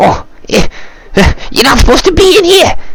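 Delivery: very high, panicked, frightened goblin voice. A goblin finds intruders, fear in his eyes; frightened goblin. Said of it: "you kind of see like fear in his eyes".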